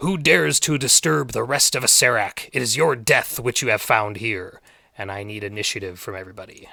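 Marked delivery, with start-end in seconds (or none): 0.0-4.6 booming, loud, demanding voice filling the room. Game master voicing a voice that fills the room, booming Acererak voice. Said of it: "there's this booming voice that seems to emanate from the entire room".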